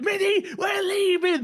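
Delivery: very high, urgent shrieking yell. Speaker retells screaming at his playing partner to leave during a game: retelling a scream. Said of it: "I'm screaming at Minnie".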